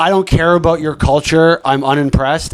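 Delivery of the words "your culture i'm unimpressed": ordinary talk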